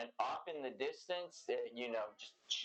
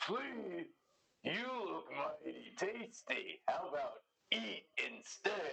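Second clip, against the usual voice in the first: leisurely, slow giant monster voice, pitched up; 5 semitones higher than usual. Voicing a giant who answers a spell telling it to flee: giant voice. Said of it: "he looks at you and says".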